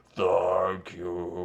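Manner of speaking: gravelly character voice. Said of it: "he's doing, like, a gravelly voice".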